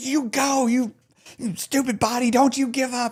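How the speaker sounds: mock screaming hard, very high and shrill. Retelling a hard moment, screaming at own body: imitating own screaming. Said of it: "I was screaming at myself".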